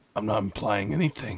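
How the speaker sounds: suggestive, loaded inflection with insinuating lilt. Answering someone who says he is implying something, with an insinuating inflection. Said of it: "you have an inflection in your tone".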